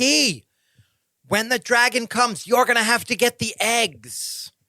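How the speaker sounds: loud call projected as if across a distance. In a role-playing game, the speaker's character calls out to another character: yelling with hands cupped. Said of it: "I yell".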